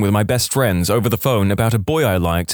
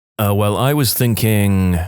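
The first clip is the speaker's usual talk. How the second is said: ordinary talk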